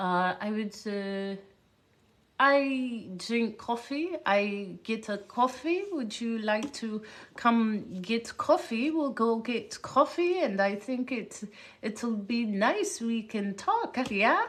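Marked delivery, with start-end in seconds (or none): 0.4-14.0 put-on drawn-out Eastern European accent. Speaker retelling what a woman living in Germany said, imitating her Eastern European accent. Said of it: "let me see if I can do her accent".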